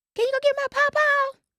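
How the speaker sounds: put-on very high little-kid voice yelling. Recalling calling across a yard as a kid for papa: retelling a child's little yell. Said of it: "they heard my little voice yelling across their yard".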